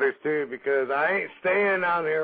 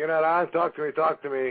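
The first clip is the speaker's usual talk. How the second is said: ordinary delivery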